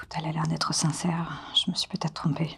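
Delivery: quiet whisper. Playing a character who whispers to a companion: whispering in character. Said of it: "Je chuchote du coup à ça".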